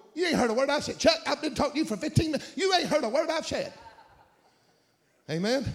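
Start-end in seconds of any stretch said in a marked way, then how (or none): 0.2-3.7 pitched-up, complaining, scolding wife voice. Imitating another man's wife who says she was not heard: April's voice. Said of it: "You hear April's voice?".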